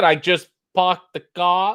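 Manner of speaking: spoken with a Boston accent. Answering a viewer asking how the accent is coming along, Boston accent. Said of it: "how's the Boston accent coming along? It was good".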